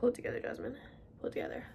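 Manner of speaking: tearful, fast, hushed crying whisper. Vlogger telling viewers the greatest day of her life is coming, crying. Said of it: "Okay, I'm actually crying".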